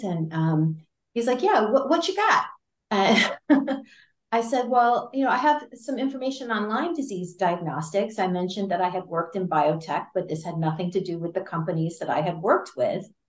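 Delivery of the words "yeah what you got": put-on slight Boston accent, very high-pitched. Act out some guy getting on the phone with you, with sort of a Boston accent. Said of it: "sort of a Boston accent".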